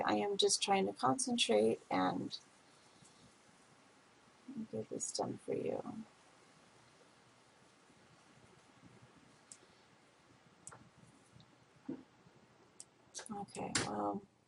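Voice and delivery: speaking slowly. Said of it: "I'm sorry if I'm speaking so slowly".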